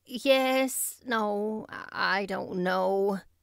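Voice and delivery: tired, weary, very slow and drawn out. Narrator reading a woman's reply in dialogue, weary. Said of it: "said Marilla wearily".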